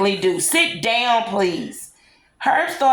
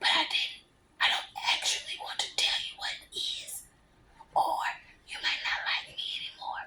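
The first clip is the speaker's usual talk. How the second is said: secretive whisper, higher and quieter; 8 semitones higher, 14 dB quieter than usual. Reading a story aloud, a character confiding a problem: whispering secretly. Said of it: "I whispered to him very secret".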